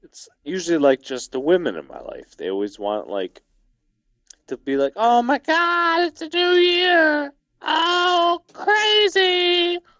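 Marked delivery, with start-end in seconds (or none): 5.0-9.8 very high woman voice, drawn-out "oh". Describing how the women in their life greet the New Year, in an impression of a woman. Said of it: "I've not heard that woman woman impression ever".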